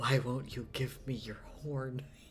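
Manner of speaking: hushed half-whisper, breath only. Reading a scene where he grabs a goat's face in his hands: half-whisper. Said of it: "He whispers".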